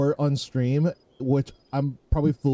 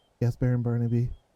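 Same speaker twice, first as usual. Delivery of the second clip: quiet, meek, submissive voice, lower; 3 semitones lower than usual. Voicing a clown answering the baron quietly: quiet, meek reply. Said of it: "she just quietly goes".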